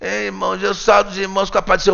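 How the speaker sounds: shy, timid voice, held inward and swallowed back. Mimicking a timid preacher greeting the congregation: mock-timid, speaking inward. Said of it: "com uma timidez ... falando para dentro".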